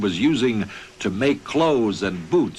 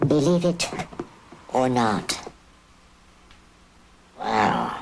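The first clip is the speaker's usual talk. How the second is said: squeaky, high-pitched helium voice; 2 semitones higher than usual. Showing how inhaling helium changes the voice: high-pitched helium voice. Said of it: "it will make my voice go up and up".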